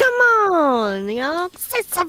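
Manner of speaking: loud, swooping, drawn-out shout. Mocking a friend's habit of interrupting himself: imitating Jeffy. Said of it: "Is that supposed to be me?".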